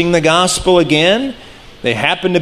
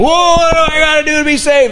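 mock, very high, frantic, panicked outburst; 11 semitones higher than usual. Acting out a man on his knees asking how to be saved: acted panic, freaking out. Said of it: "he's on his knees shaking".

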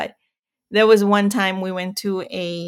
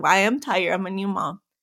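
put-on sarcastic tone. New mom retelling her answer to a man who said she looked tired, sarcastic. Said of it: "my sarcastic attitude was like".

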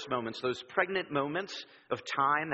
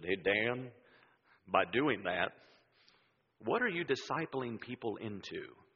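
put-on slow Southern accent with stretched, drawn-out vowels; 5 semitones lower, 3 dB quieter than usual. Retelling how Greg questioned him, in Greg's southern drawl. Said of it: "in his great southern drawl".

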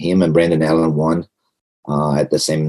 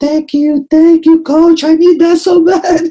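mock grown-man crying, much higher and louder; 6 dB louder than usual. Coach acts out one of his fighters thanking him: imitating a grown man crying. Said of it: "grow up man, like crying, look at me".

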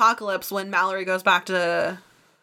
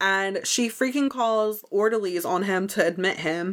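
normal talking voice

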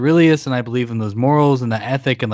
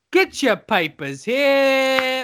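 fake, put-on Cockney accent; 13 semitones higher than usual. Joking about Ancient Rome, a line in a put-on Cockney accent. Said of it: "You wouldn't believe it if I didn't have a Cockney accent".

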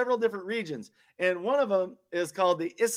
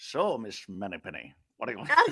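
put-on very low, soft Scottish accent; 11 semitones lower, 6 dB quieter than usual. Telling another speaker to check out Sean Connery, doing Sean Connery's Scottish accent. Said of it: "he's got that Scottish accent too. He's like".

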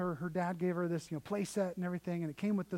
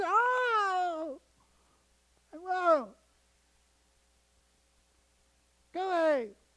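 mock very high, very slow, drawn-out tearful crying; 12 semitones higher, 6 dB louder than usual. Retelling a daughter refusing her father: imitating a girl crying. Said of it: "And crying".

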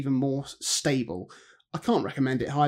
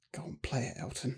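muttered under the breath, much quieter; 12 dB quieter than usual. Recalling what someone murmured while a man hesitated to sit, under his breath. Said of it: "under his breath just go".

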